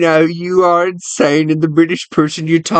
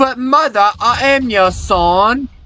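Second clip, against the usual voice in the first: put-on British lad accent, son drawn out; 6 semitones higher than usual. Playing a son pleading with his mother, in a british accent. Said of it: "you're some British lad".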